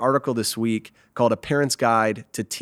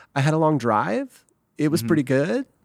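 rising uptalk tune at each sentence end; 4 semitones higher than usual. Acting out answering how the morning was, every sentence ending on a rise. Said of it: "You end everything up. Everything sounds like a question".

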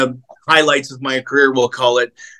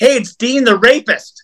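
play-acted, high, taunting heckling yell from far off; 9 semitones higher than usual. Retelling being yelled at from across a store: imitating someone yelling. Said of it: "I was yelled at from across the store".

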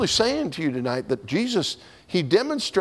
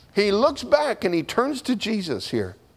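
ordinary talk

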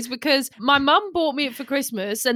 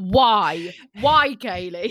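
put-on aggressive, confrontational, demanding tone, why drawn out; 4 semitones lower than usual. Mocking the other speaker's question about the bike shop: imitating an aggressive question. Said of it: "why did you ask that in such an aggressive way".

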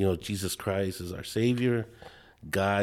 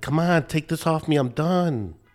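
acted pleading yell, higher, louder, slower; 8 semitones higher, 5 dB louder than usual. Recounting bawling, the speaker acts out how he was retelling yelling at God. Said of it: "I'm yelling at him and I'm like".

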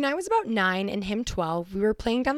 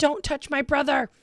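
put-on young child's screaming, outburst voice; 6 semitones higher than usual. Retelling jumping on a kid who hit her brother: imitating a child screaming. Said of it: "screaming at him".

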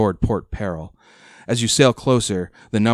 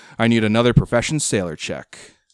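ordinary delivery

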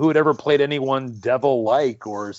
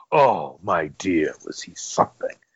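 deep, slow drawling voice; 8 semitones lower than usual. Retelling what Peter O'Toole said when asked about a co-star: imitating Peter O'Toole. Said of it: "and he just kind of went".

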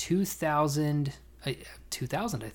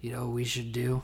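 fake slurred drunk voice. Retelling what Lance said in the truck bed, imitating Lance slurring drunk. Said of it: "he slurs".

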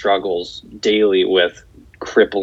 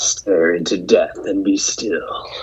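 exaggerated, slow, edgy put-on metal-style voice. Announcing an album title on a podcast, in an edgy put-on voice. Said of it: "I gotta do it in my edgy voice".

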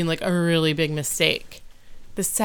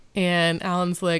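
ordinary talk, nothing marked

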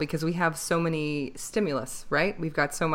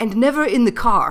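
put-on German accent, higher and louder; 7 semitones higher, 10 dB louder than usual. Retelling what a teacher with a German accent told her: imitating a German accent. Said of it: "he had this German accent".

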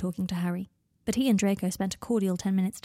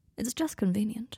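hushed, soft, quiet murmured voice; 2 semitones higher, 5 dB quieter than usual. Draco answers Harry after Harry gives him a look; murmured. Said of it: "he murmured".

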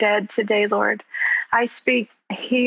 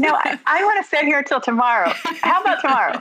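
mocking, sarcastic, high sing-song delivery; 5 semitones higher than usual. Retelling what she thinks when preachers say stand: imitating own sarcastic retort. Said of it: "I'm always sarcastic".

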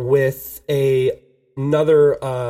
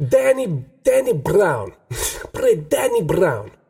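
put-on thick Italian accent, higher and slower; 5 semitones higher than usual. Retelling what an Italian man asked him to play, imitating Sandrino's thick Italian accent. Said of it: "He's this thick Italian accent".

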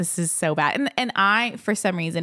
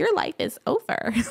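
mock, very high, giggling, teasing taunt; 10 semitones higher than usual. Speaker retells a man cracking up at the news, imitating someone laughing. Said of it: "he's just cracking up".

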